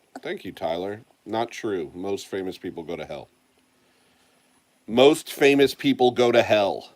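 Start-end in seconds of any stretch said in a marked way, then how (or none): 4.9-6.8 very loud, high-pitched insistent shouting. Answering a chat message, yelling. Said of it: "Sorry for yelling in your ear".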